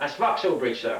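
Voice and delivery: normal talking voice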